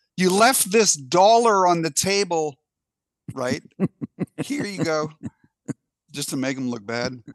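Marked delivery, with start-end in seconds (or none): 0.2-5.1 loud, high, drawn-out raised calling voice. A waitress calls out to a customer so everyone standing there hears, loud voice. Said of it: "say to the person in a loud voice".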